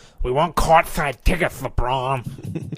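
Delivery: impression of a cartoon duck voice. Right after doing Bugs Bunny, now doing a Daffy Duck impression. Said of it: "let me do my Daffy Duck".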